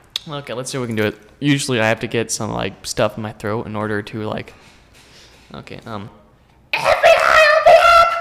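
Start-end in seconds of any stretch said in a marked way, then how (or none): 5.8-8.1 very high, loud, swooping squeaky character shout. Testing a voice on a mic, high-pitched put-on voice. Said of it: "I'd rather not do a high-pitched noise".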